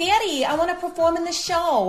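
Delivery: put-on Brooklyn accent. Describing the daughter in a show, the speaker imitates her line in a brooklyn accent. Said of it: "like Brooklyn accent".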